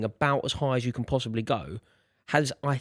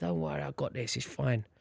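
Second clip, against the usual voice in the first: cool, breezy, soft and unbothered calm; 6 dB quieter than usual. Speaker retelling reassuring a panicking grandmother; imitating calm cool reassurance. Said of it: "I've gone really cool".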